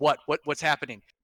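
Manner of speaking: intense, worked-up reaction voice. Retelling a player's reaction when stopped by the donkey: imitating an intense player. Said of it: "how intense this player was".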